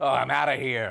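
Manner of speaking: furious, very loud angry yell. Acting out an audience member walking out: imitating someone angry.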